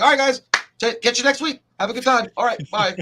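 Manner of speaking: very high, breakneck, rattled-off delivery. Acting out ending a rushed review video: acting out rushed fast talk. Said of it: "'cause I talk really fast".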